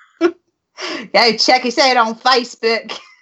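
bad, slow, put-on Australian accent. Doing the sign-off as a joke: put-on australian accent. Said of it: "do our sign-off in Australia?".

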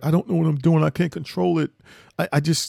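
put-on high, tearful voice breaking into tears mid-sentence. Retelling what his son said while breaking down: imitating his son crying. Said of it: "start crying. He's like".

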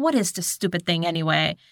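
snippy, snotty tone with attitude. Retelling a scene where a character snatches a sketchbook: imitating a snippy attitude. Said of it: "with an attitude".

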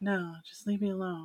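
dazed, sweet, delicate, unnatural-sounding voice. Retelling a film scene where Katie is possessed: imitating Katie's unnatural, out-of-it voice. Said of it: "And her voice is kinda like".

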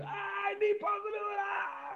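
very high, drawn-out, gasping, desperate last-breath voice. Showing how one asks for possibility at the last moment: gasping for last breath. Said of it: "like this".

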